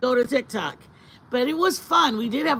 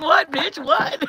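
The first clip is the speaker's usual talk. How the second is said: put-on voice of a dog; 4 semitones higher, 3 dB louder than usual. Speaking for the dog after calling to it: voicing the dog. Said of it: "Baby's like".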